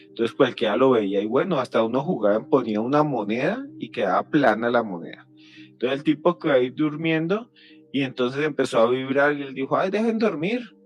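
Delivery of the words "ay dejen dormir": put-on Mexican accent laid over, pitched up. Storyteller quoting a sleeping man in a story; put-on Mexican accent. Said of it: "pero con acento mexicano".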